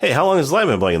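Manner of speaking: offhand, casual, unbothered and nonchalant tone. Retelling a film scene where someone asks about a blinking light: imitating a nonchalant question. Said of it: "he just says it all nonchalant".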